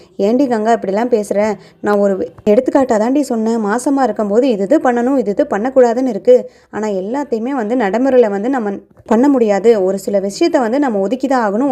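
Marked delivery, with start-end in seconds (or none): none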